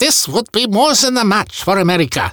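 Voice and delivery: bad German accent, pitched a bit high. Quoting Hitler, after apologizing for having to do so in a bad German accent. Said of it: "I gotta use a bad German accent when I'm quoting Hitler".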